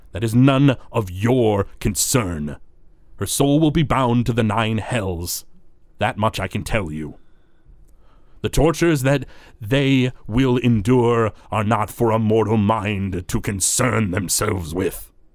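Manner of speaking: sharp, biting, harsh, snapping dismissive tone. A game master voices Zalamon answering the party, Zalamon snapping harshly. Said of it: "snaps at you guys in a harsh tone".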